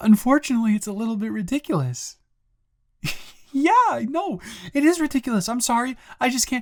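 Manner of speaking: amused talking, pitched very high. Answering someone who is yelling, smiling while talking. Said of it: "I am smiling 'cause".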